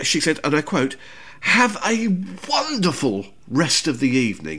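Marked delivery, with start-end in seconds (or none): 2.5-3.2 heavy stress placed on the word wonderful. Quoting a young waitress's parting words, with emphasis on 'wonderful'. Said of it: "she really emphasised the word wonderful".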